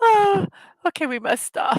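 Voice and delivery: laughing while talking. Apologizing after reading funny memes, laughing while talking. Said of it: "I'm still laughing".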